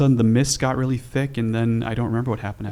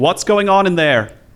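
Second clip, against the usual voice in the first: strict, severe, stern delivery in a raised voice; 7 semitones higher, 7 dB louder than usual. Game master voicing an unseen speaker from the green room, stern voice. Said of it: "You hear a stern voice saying".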